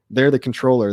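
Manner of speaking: plain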